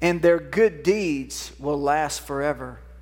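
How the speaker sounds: slow, deliberate delivery, each word given time. Reading a passage aloud to listeners so it can sink in, reading slowly. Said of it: "I'm reading it slow so it can kind of sink in".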